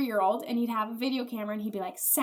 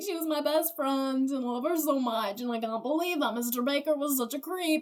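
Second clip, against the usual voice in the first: put-on tearful sobbing, fake crying through the words; 3 semitones higher than usual. Retelling how a student spoke to the principal, imitating Lucas fake crying. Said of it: "he's fake crying".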